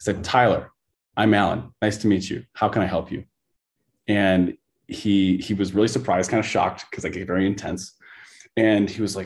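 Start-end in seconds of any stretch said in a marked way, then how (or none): none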